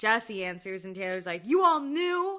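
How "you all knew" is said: high-pitched screaming outburst. Retelling how Taylor screamed at Jesse on the phone, imitating Taylor screaming. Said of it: "she's like screaming at him".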